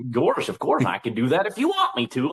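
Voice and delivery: pitch swinging up and down like a cartoon dog. After forty years doing the voice, offering to do it again, in Goofy voice. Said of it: "about forty years I've been doing that voice".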